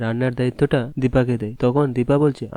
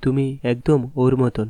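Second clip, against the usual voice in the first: usual speaking voice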